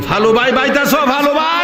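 high-pitched, sly, called-out voice.

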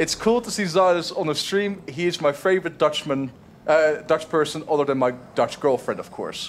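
ordinary delivery

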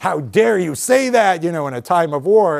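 indignant retort. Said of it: "someone else was like".

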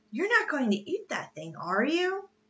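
with a gasp. Narrator reads Mr. Azaria Jones after Mountain Jim catches a shark, gasping. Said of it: "Azaria Jones gasped".

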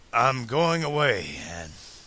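plain reading voice

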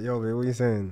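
exaggerated sleepy just-woke-up voice. Showing how a guy sounds just after waking up: imitating a morning voice. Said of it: "your voice is a bit like".

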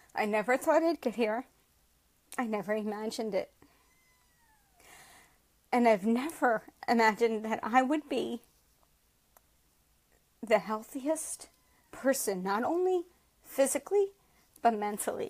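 voice choked and catching with emotion. A speaker addresses the group, struggling to get through it, choked up. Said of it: "Sorry, guys, this is hard".

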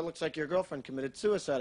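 ordinary talk

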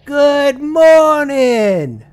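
very high, slow, drawn-out yelling.

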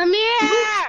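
loud, high yelling call, carrying far.

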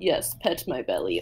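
put-on sly Russian man's accent. Voicing a pet as imagined by the speaker: sly Russian man voice. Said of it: "like, sly, like, Russian man where he's like".

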